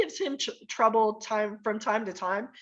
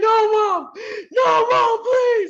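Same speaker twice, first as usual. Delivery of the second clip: weepy, crying, very high and very loud; 12 semitones higher, 9 dB louder than usual. Retelling a son pleading not to get the belt: imitating a crying child. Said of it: "Already crying".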